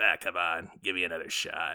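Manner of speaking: low, smarmy little voice. Retelling an actor's line from a movie trailer, in Adam Sandler smarmy voice. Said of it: "he's in his little swarmy voice".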